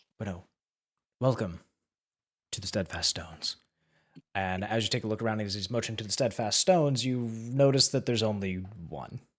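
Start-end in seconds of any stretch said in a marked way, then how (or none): 0.2-3.6 deep gnome priest character voice. Voicing a deep gnome priest greeting the players: voicing the deep gnome priest. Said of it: "he turns around, and he's just like".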